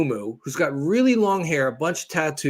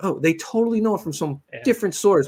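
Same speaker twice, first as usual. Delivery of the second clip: usual speaking voice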